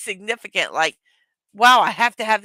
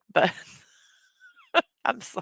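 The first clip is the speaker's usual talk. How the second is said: talking through laughter, higher and quieter; 9 semitones higher, 5 dB quieter than usual. Apologizing for laughing at own joke: laughing while talking. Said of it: "I'm gonna laugh at my own stupid little jokes".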